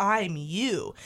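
ordinary delivery

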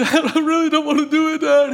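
put-on very high, loud, tearful child's crying. Retelling a scared moment at nine, pleading with his dad: re-enacting crying as a child. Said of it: "I'm like crying".

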